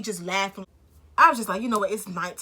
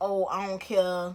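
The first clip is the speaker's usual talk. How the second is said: mock laughing while speaking, much slower. Retelling how he answered her complaints, imitating someone laughing while talking. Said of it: "he like just laughing like".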